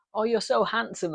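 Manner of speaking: wholesome mum voice. Retelling a mother seeing her son after years: imitating a wholesome mum. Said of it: "says it in that very kinda, wholesome way that, like, mums do".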